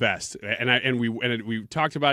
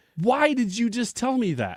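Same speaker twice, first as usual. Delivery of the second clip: mock-angry voice, pitched higher; 12 semitones higher than usual. Retelling how a wife reacted to a joke: imitating an angry wife. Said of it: "she got visibly angry at me".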